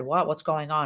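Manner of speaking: normal talking voice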